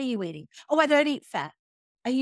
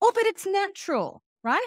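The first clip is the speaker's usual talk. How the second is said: play-acted sarcastic tone, pitched up; 7 semitones higher than usual. Talking with another speaker, openly sarcastic. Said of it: "I'm being sarcastic".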